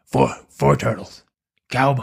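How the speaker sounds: ghoulish character voice. Acting out a movie producer pitching to studios: Beetlejuice voice. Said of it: "Beetlejuice. That's what I sounded like".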